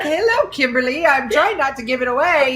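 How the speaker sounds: put-on British accent. Retelling how a man posing as Nigel greeted the speaker, British accent as Nigel. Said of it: "with his British accent".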